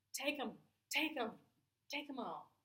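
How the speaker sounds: high, loud screaming voice.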